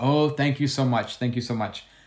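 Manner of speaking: play-acted, offhand, dismissive, brushed-off tone. Retelling thanking an old woman to make her leave: imitating own dismissive thanks.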